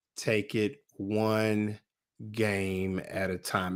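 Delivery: very slow, low, soft, deliberate, carefully spaced delivery.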